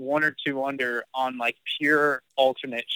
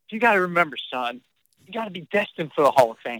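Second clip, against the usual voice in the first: put-on dead serious voice, pitched higher; 3 semitones higher than usual. Retelling what dad said during a golf tournament: imitating dad, dead serious. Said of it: "And he goes".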